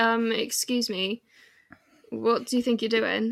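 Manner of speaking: ordinary talk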